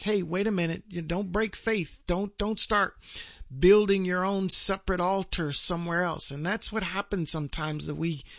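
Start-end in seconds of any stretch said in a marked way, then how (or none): none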